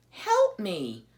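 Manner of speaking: timid, small, high little voice. As the porcupine turns to leave her, Poppy asks him for help in a small voice. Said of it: "Poppy said in a small voice".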